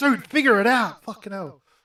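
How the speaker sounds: high-pitched, yelled scream. Retelling reacting to the pair on screen: imitating screaming at them. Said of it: "screaming at them".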